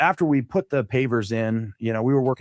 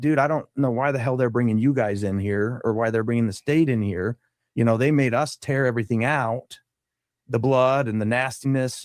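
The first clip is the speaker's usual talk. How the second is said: ordinary talk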